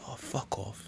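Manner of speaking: very soft, hushed background whisper. Retelling a parish council meeting where someone in the background whispers: imitating someone whispering. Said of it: "you hear somebody s-, whispering".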